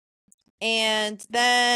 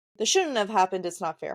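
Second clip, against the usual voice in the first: ordinary talk, nothing marked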